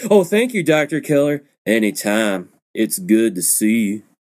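put-on hokey, horrible twang. Imitating an actor's line from a movie: imitating a horrible twang. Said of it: "this horrible twang in his voice".

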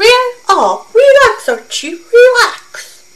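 put-on squeaky voice. Recalling an old radio show intro, speaker does Jughead's line in a squeaky voice. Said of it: "I'm trying to do a squeaky voice".

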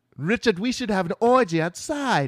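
put-on British accent. Acting out a woman urging her partner richard: british accent. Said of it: "that's a good British voice or not".

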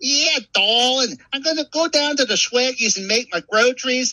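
put-on very high-pitched, full local New Orleans accent. Offering to show real local speech, the speaker does an actual New Orleans accent. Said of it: "you want to hear an actual New Orleans accent?".

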